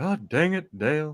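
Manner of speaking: loose, airy voice, slow and drawn out. Imitating a friend doing a cartoon voice: airy Hank Hill voice. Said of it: "when he does his Hank Hill".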